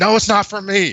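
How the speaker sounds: very high-pitched, loud scream. Retelling condoms falling from a bag in front of a date: retelling own past scream. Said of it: "I have to start screaming".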